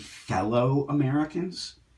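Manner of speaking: very sarcastic delivery, dripping with sarcasm. Speaking about the people who targeted him, sarcastic. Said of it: "I say this very sarcastically".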